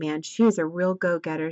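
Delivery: ordinary talk, nothing marked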